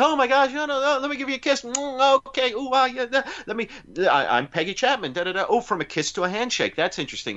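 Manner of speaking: very high, flustered, all-aflutter chatter. Retelling a movie scene, imitating the flustered rescued snorkeler Peggy Chapman. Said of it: "she actually sounds a bit like Amanda sounds right now".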